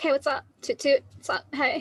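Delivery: very chill, loose, easy, unbothered character voice. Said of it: "her character voice is actually more like this".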